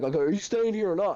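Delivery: high, loud, demanding tone.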